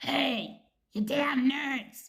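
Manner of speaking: high, loud, slow, snarky and raspy voice.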